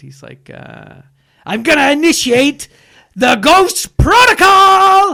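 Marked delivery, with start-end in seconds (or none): 1.5-5.1 loud, booming, high, drawn-out heroic belting. Showing how Tom Cruise sounds in the movie: imitating Tom Cruise. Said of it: "that's how he sounds in that movie".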